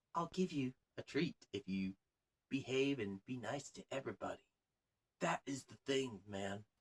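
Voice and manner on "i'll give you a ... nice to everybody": soft, gentle, pleading coaxing voice. Imitating how parents talk to a misbehaving child: imitating a gentle pleading parent. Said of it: "But I'm gonna be gentle about it".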